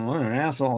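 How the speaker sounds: grumbling, under-the-breath mutter to oneself. Playing a character who sees a driver in a van: muttering. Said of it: "I'm kinda muttering".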